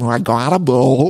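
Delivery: slow, mushy, mumbly drawl as if mouth full. Retelling a castmate bragging about a boat: imitating Gina's mumbly accent. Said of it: "in that accent where it sounds like".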